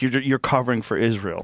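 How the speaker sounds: normal talking voice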